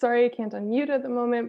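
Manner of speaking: usual speaking voice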